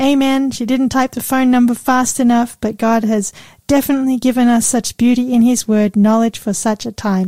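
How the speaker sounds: ordinary talk, nothing marked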